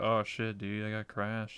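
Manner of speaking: plain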